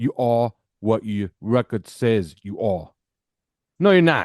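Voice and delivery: slow, awful attempted New York accent. Wishing they could do a New York accent, then trying: bad New York accent. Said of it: "It'd be better if I could do a New York accent".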